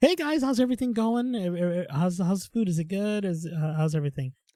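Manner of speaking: put-on bright, cheerful voice. Retelling greeting a table at a restaurant: imitating own cheerful greeting. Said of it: "with the biggest smile".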